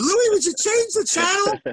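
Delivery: shrill, very high, loud yell. Retelling how mom yelled at dad to change the channel: imitating mom yelling. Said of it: "she'd yell at my dad".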